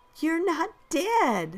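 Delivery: gasping out the words. Bethany, among kids laughing too hard to answer, finally speaks to the narrator, gasped out. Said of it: "Bethany gasped out".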